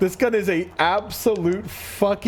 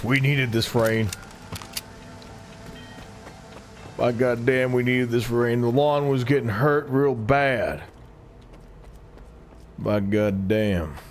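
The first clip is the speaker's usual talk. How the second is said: very low, homespun Midwest dad voice; 7 semitones lower than usual. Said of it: "Midwest dad voice".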